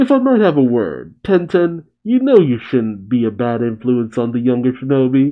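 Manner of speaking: ordinary delivery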